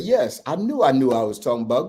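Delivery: ordinary talk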